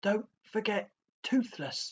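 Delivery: through clenched teeth. A narrator reads a character's reply to his dragon, spoken through gritted teeth. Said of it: "said Hiccup through gritted teeth".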